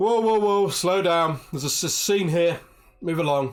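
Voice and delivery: loud, high-pitched, commanding shout. Voicing a guard stopping approaching players: Council Guard ordering you back. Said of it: "one of the Council Guard is like".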